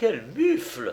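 cried out. Narrator reads Marthe Chemilly summing up her companions' opinion, crying out. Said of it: "S'écria Marthe Chemilly".

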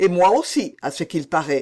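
plain

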